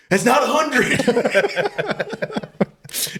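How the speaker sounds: very high, swooping, unraveling exasperation, acted out. Retelling a drive-through order, the speaker imitates someone losing his cool. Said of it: "Just losing his cool".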